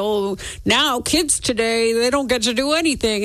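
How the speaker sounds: cranky, grumpy curmudgeon voice. Host voicing people who complain about kids today, in a put-on curmudgeonly voice. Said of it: "That was my curmudgeon-y voice".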